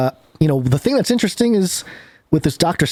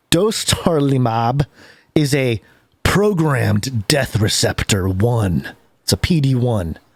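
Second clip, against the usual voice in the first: intense, dramatic reading in a super deep voice. Reading a medication description aloud, in a super deep dramatic voice. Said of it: "with your super deep voice that I'm hearing right now".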